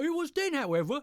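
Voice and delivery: very high, bright, cheery, uplifting narration. Trying out reading voices on a passage, happy uplifting voice. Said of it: "that's my happy uplifting voice".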